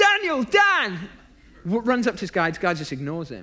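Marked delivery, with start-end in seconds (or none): 0.0-1.0 very high-pitched, loud hollering shout. Retelling a man who stands up and calls to a stranger: imitating someone shouting a name. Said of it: "he shouts".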